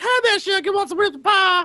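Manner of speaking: put-on high little old lady voice. Describing a ribs-and-pie place run by a little old lady, imitating a little old lady. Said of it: "it's a little old lady. She's like".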